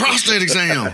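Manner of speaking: very high, loud, mock thrilled, excited blurt. Retelling how the other speaker just answered: imitating an excited voice. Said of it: "he said that with a lot of excitement".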